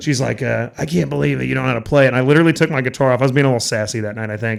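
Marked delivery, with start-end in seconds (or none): 0.8-2.1 put-on raspy, smoker-like, drunk-sounding woman's voice. Retelling a complaint from an audience member at a show: imitating a drunk audience member. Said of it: "That's my impression of her".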